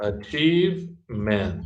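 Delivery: achievement slow, in three clear separate syllables.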